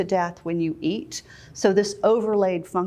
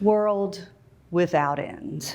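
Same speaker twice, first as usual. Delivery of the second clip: heavy falling pitch, dropping all the way at end. Illustrating an overly falling inflection in preaching: heavy falling pitch on end. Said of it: "If it's overly falling inflection".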